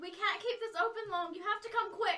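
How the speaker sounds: high, loud, desperate calling out.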